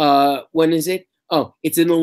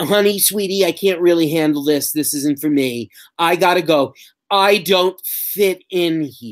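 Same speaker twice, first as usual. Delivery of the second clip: condescending, patronizing, dismissive talking-down tone. Discussing a show's character, mimicking how he talks to her in a condescending tone. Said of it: "he speaks to her in the most condescending tone of voice".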